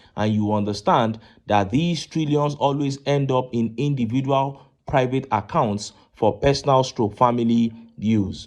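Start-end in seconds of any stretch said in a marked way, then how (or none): none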